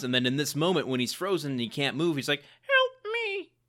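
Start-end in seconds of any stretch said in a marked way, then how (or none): 2.4-3.4 very high-pitched voice pushed into a squeak. Retelling a frozen man who can't move, high-pitched Tin Man voice. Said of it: "his voice gets so high-pitched, but he kind of sounds like the Tin Man".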